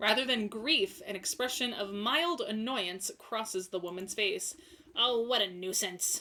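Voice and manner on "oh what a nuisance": put-on old lady voice. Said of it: "also an old lady voice".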